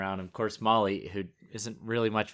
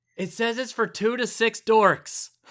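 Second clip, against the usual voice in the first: high, blurted-out remark, acted; 13 semitones higher than usual. Retelling what a woman said after turning over a game box, way too loud voice. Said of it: "in a way too loud a voice".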